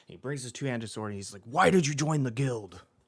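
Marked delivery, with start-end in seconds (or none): 1.5-2.8 loud bellowing roar. Game master voices a swordsman rushing at the player, roaring. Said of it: "what he's roaring as he's doing this".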